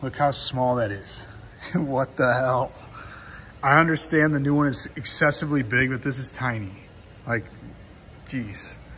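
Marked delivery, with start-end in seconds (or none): 1.7-2.7 slow, laughing disbelief. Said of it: "I'm, like, laughing right now".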